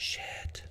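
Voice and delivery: soft, barely voiced whisper. Saying a word that's bad to people not raised on a farm: whispered 'shit'. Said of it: "I should whisper it".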